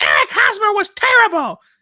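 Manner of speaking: put-on shrill, very high, very loud screeching Northeastern accent. Imitate the man who cut in after hearing you talk about Kansas City, screeching Northeast voice. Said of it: "this screeching voice from the Northeast reeks up and goes".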